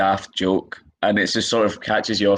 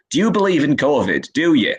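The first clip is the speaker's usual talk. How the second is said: put-on Yorkshire accent, pitched up; 6 semitones higher, 3 dB louder than usual. Comedian mocking a heckling couple from Yorkshire: Yorkshire accent. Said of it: "a couple from Yorkshire once that heckled me".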